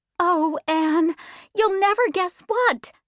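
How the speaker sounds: high, eager, bursting cry. Reading fiction, Diana, waiting at her front door, greets Anne: cried out. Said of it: "Diana cried".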